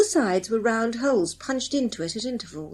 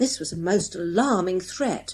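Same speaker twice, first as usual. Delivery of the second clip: plain reading voice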